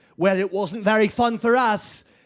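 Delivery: put-on English accent. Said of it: "Only it was just an English accent".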